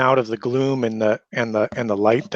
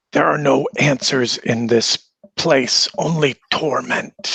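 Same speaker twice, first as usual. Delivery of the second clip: hissed words. A game master voices a spirit answering the party's question: hissing. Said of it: "He hisses and draws back".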